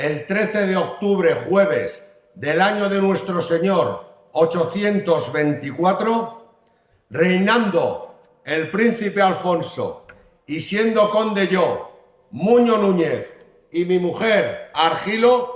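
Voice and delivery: southern Spanish accent. The mayor reads the Brañosera charter aloud to listeners, Andalusian accent. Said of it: "escuchar el fuero de Brañosera con acento andaluz".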